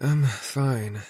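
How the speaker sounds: weak, feeble voice. Reading a story aloud, an injured character insisting she is okay: weak voice. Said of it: "she says in a weak voice".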